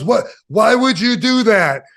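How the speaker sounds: exasperated, angry, high-pitched voice. Retelling how someone reacted to the shirt you wore during a match, sound mock-mad. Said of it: "And he was like mad".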